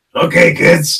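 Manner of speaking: abrasive, obnoxious, loud clown-host voice. Speaker shows his audience how he does a cartoon voice: Krusty the Clown voice. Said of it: "It's the only asshole voice I got".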